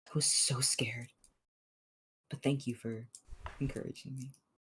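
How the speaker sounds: soft, hushed half-whisper. Backstage, she hugs the listener and speaks into his shoulders, half-whispering. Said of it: "she like whispers into your".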